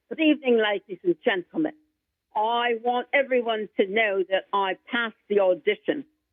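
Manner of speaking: speaking in a put-on English accent. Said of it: "he talks like this with his English accent".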